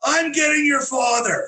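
very high, furious, temper-lost outburst. Retelling a woman who flips over the earrings: imitating someone losing her temper. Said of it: "loses her lid".

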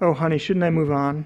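plain

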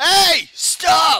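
loud high yell.

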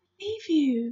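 soft-spoken, quiet, reassuring tone. Sophie tells the BFG she believes him after offending him, softly. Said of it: "she said softly".

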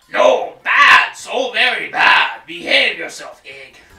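very loud, bellowing goblin voice. Speaker adds a bit of exclusive dialogue for viewers: Hoggle impression. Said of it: "That's my impression of a Hoggle".

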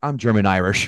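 very low, dead flat deadpan voice. Quoting a favorite movie line from Tom Hagen: imitating Tom Hagen's deadpan delivery. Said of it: "with the most deadpan line goes".

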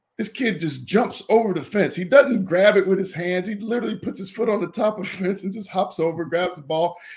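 high, amped-up, amazed delivery. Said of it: "He goes".

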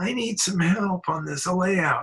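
fake-helpless, needy-sounding put-on tone. Retelling how a man came in to ask for help, imitating Scott's put-on helpless voice. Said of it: "made his voice sound kind of like he was more helpless".

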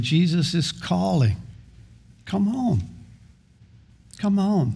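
gentle, tender delivery. Voicing what he says to those who are struggling, quoting him softly and tenderly. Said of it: "He says softly and tenderly".

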